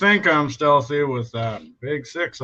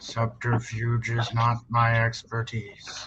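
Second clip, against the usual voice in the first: whispering as quietly as possible, much quieter. After a door bangs open during a sneaky approach, a character replies; whispering as quietly as possible. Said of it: "I whisper as quietly as I can".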